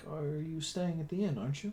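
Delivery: concerned, worried, barely audible voice. Narrating, voice the woman an adventurer asks for blankets, concerned. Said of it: "She looks concerned".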